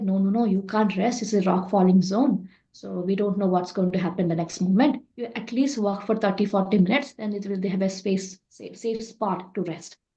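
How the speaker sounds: ordinary delivery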